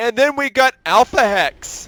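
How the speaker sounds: voice cracks, jumping up very high. Speaker commentating a game match introduces a player, voice cracking. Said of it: "Did my voice just crack?".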